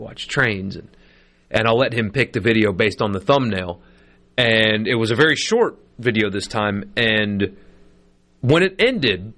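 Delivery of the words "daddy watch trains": put-on quiet, croaky, rough little sick voice. Father quoting his sick son early in the morning, imitating a quiet little sick voice. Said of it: "in his quiet little sick voice".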